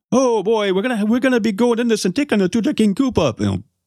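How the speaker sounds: very high, deliberately bad caricature voice. Show host showing how a whole movie might sound, bad stereotypical impression. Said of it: "I know I'm going to do a bad impression here".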